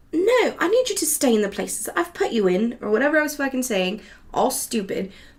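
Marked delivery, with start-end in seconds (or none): 0.1-2.7 put-on high, swooping British accent. At work, talking to glasses that keep falling over, in a put-on British accent. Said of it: "talking to the glasses in this British accent".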